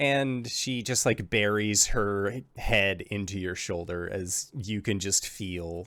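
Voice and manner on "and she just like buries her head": usual speaking voice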